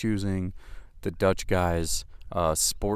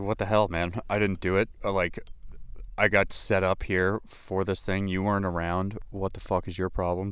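ordinary talk, nothing marked

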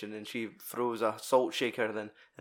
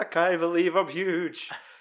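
slow, weird voice with a chuckle running through; 7 semitones higher, 6 dB louder than usual. Retelling a scene of a character growing giant: imitating Ant-Man's weird laugh. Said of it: "this weird laugh where he's like".

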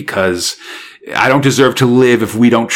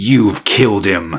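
put-on accusing tone, calm and even; 3 semitones lower than usual. Recounting a scene where one character accuses another, retelling a calm accusation. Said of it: "real accusingly and stuff".

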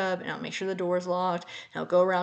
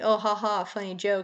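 put-on laughing voice; 2 semitones higher than usual. Retelling a friend's reply to the announcement: imitating a friend laughing. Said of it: "his friend was laughing, saying".

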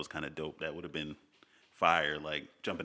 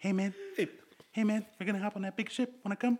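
put-on gentle creature voice. Talking about the Thor films, quoting a line in a Korg impression. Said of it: "Why does he even talk like that?".

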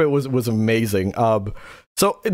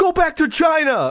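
high, mocking yell. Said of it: "somebody goes".

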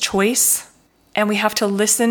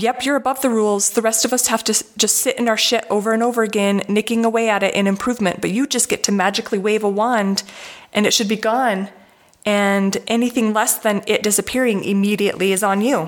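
plain

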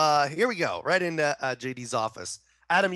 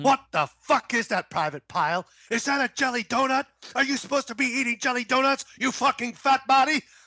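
pitched-up drill-sergeant berating, drill-instructor style; 9 semitones higher than usual. Recalling Full Metal Jacket in conversation, play R. Lee Ermey in Full Metal Jacket addressing a private. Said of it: "Arlie Ermey in Full Metal Jacket".

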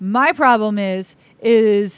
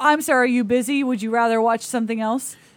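usual speaking voice

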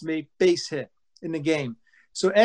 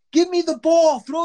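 mock scream, much higher and louder; 12 semitones higher, 4 dB louder than usual. Retelling a player coming out of the dugout, imitating his scream. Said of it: "he's screaming".

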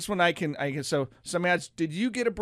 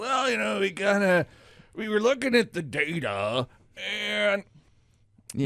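put-on stiff official voice, slow and strained. Imitating someone who comes out and speaks, in a Fed voice. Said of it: "That's the best Fed voice I can offer right now".

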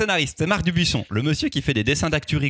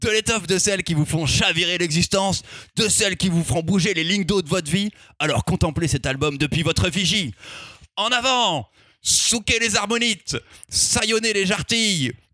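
put-on pirate captain accent, pitched up; 7 semitones higher than usual. Introducing an album to listeners, pirate accent. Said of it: "je continue avec l'accent de pirate".

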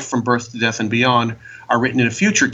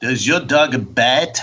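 bad put-on French accent. Answering with a quoted line as a bad Peter Sellers imitation. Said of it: "Bad imitations of Peter Sellers' bad imitation".

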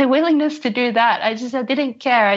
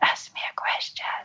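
barely voiced, very quiet, faint whisper. Retelling asking the partner for a question: imitating own whisper. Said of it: "And said it again".

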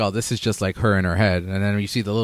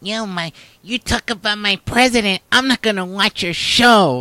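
mocking, put-on, very high, whiny voice; 11 semitones higher than usual. Mocking viewers who quit a show: mocking Trump supporter voice. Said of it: "That's what Trump supporters sound like".

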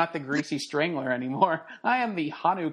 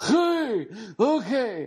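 put-on higher old man voice; 7 semitones higher than usual.

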